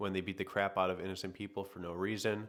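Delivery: ordinary delivery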